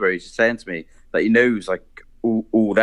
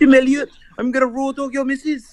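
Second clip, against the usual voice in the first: very high-pitched put-on character voice. Doing impressions on request from the other speaker: Paddy the Baddy voice. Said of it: "Or Paddy the Baddy".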